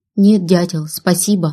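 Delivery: ordinary delivery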